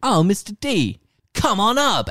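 put-on, very high, loud, hammy, overacted excitement. Pitching a scene, voicing the concierge greeting Hal: overacting excited concierge. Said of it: "he overacts it".

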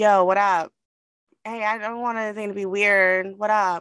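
uneasy, nervous, overly friendly, repeated. Retelling how a nervous wedding guest kept greeting people: imitating Sam, nervous. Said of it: "he kept saying".

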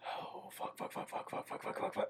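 soft, unvoiced, panicked whispered cursing.

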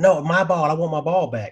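put-on yelling like a little kid. Retelling a grandson's protest after the ball is taken: imitating a child yelling. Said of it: "he's yelling at me".

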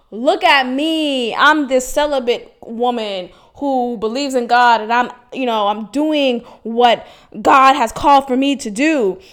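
showy, self-righteous bragging. Retelling how she used to announce her celibacy: imitating own showy pious boasting. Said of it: "I would say it in a way that was kinda like".

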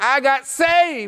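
play-acted very high, all-excited burst. Retelling a phone call, the speaker quotes the sister's news, imitating excited sister. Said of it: "She was all excited and jumping up and down".

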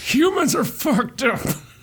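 put-on high, wheezing elderly man's voice. Continuing the story in a put-on voice: wheezy old man voice. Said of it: "Fine, I'll do like wheezy old man".

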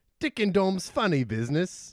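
put-on British accent. Saying a show title after being asked for a british accent. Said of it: "Can you say the title in a British accent real quick?".

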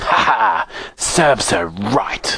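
slow, drawn-out wicked queen cackling laugh. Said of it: "cackled the Star Queen".

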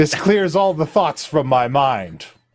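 stern, solemn high cleric character voice. Voicing a stern high cleric greeting the players: stern high cleric character. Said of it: "She says".

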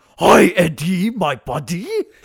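put-on monster voice. Mocking an actor's overacting in a movie: Venom voice. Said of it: "And Venom".

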